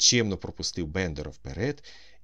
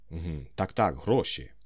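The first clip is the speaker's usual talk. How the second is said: usual speaking voice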